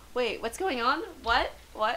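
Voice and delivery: ordinary talk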